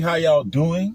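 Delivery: put-on New Orleans accent. Greeting everybody on a Tuesday morning: put-on New Orleans accent. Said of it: "That's my New Orleans accent".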